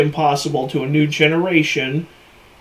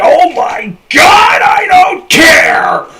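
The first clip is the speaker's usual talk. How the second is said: very high, very loud, furious put-on screaming; 13 semitones higher, 9 dB louder than usual. Mocking a movie's plot, then yelling about it: screaming like Sam Kinison. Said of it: "he about blew out the speaker".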